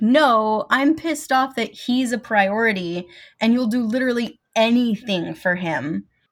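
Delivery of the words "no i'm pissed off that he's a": plain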